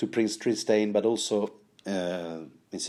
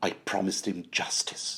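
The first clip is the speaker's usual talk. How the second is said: put-on British English accent, quieter; 5 dB quieter than usual. Trying out a Tyrion line in a Peter Dinklage impression. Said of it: "try my best Peter Dinklage, uh, delivery".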